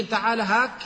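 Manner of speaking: ordinary delivery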